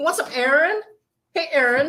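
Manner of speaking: put-on Valley Girl accent, pitched high. Joking about how a name sounds, speaker does a valley girl voice. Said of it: "like like Simi Valley Girl".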